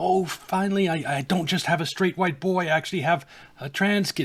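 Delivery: mock thrilled, high, excited gushing voice. Imitating a parent whose kid tries on a dress: imitating an excited parent. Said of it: "gets all excited".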